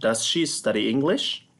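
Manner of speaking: rising, questioning tune climbing on English. Teaching a yes-no question, rise at the end on English. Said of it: "this is a yes no question, so it has a rising intonation".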